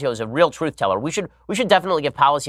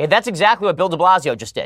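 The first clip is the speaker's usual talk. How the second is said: plain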